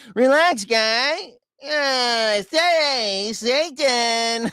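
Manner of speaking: very slow, high cartoon voice, drawn out, uh stretched. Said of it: "he has the same voice as Saddam Hussein".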